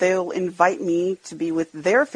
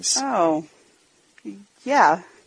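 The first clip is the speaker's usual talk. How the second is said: not happy, lacking enthusiasm. Reminded that christmas is coming, unenthusiastic. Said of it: "you don't sound very happy about it at all".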